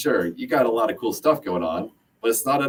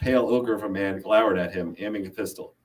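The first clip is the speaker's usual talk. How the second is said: ordinary delivery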